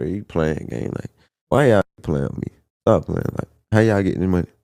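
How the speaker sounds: play-acted incredulous, disbelieving words through laughter. Retelling asking rich friends how they got their money: imitating own laughing disbelief. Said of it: "I'm still laughing at him".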